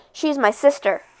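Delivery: ordinary delivery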